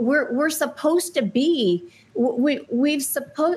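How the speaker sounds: stumbling stammer. Speaking after listening to people say terrible things, stuttering. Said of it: "I'm stuttering".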